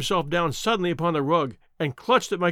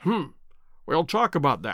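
ordinary delivery

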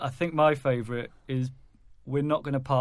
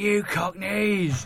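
high-pitched, jeering, heckling yell; 7 semitones higher, 3 dB louder than usual. Retelling a fan in the stadium shouting at Spurs: retelling a shout. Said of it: "just shouting at Spurs".

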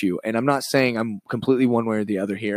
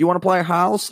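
put-on little kid voice, higher pitched; 8 semitones higher than usual. Acting out children playing pretend: Chris D'Elia little kid voice. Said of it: "I'm doing Chris D'Elia's little kid voice".

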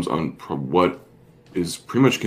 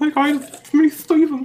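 put-on prepubescent kid voice, higher. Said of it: "sounds like a fourteen-year-old, like, prepubescent".

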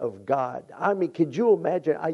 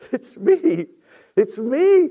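very slow, raised, weeping tearful delivery; 9 semitones higher, 6 dB louder than usual. Retelling Joseph revealing himself to his brothers, acting out Joseph in tears. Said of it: "Can you imagine tears coming down his face".

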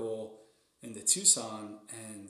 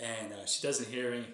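ordinary delivery

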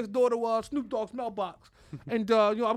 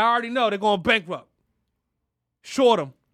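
put-on tough taunting voice, louder; 4 dB louder than usual. Imagining what Elon Musk said about rivals: imagined tough-talking Elon Musk. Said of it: "I'm sure it's just like that".

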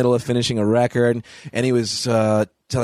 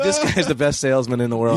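usual speaking voice

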